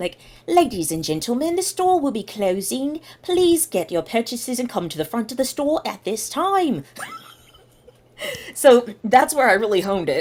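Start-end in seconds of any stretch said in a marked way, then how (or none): 0.5-6.8 put-on British intercom announcer voice, pitched up. Redoing a store intercom announcement that retail coworkers requested, in a British accent. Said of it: "Do a British accent this time".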